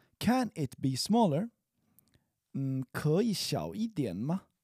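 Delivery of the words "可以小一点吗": slow, careful delivery. Demonstrating a chinese phrase for learners, said slowly. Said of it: "I'll say it slowly and then quickly".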